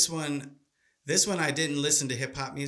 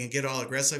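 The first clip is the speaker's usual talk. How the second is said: plain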